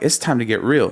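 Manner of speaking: plain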